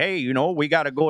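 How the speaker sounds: put-on Midwest accent. Speaker imitating how their in-laws in Iowa talk, Midwest accent impression. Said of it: "do you have a Midwest accent impression you can give us?".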